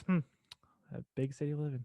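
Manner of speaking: very quiet, hushed, snide mutter under the breath. Retelling how a brother jabs after a mistake: imitating a mutter under breath. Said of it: "he just throws it under his breath".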